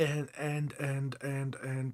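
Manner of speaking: soft, slow, halting, stuck stammering. Reading love messages from the guides to a listener, stammering. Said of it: "I'm, I'm stammering there".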